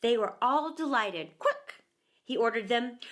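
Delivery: ordinary delivery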